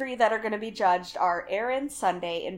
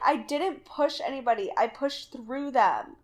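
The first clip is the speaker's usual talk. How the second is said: put-on crying, slow and tearful; 3 semitones higher than usual. Retelling what one of the girls said in the limo: imitating Erin crying. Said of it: "As she's crying".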